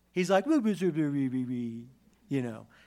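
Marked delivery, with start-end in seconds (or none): 0.5-1.9 exaggerated, babbling baby talk. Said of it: "God's doing baby talk".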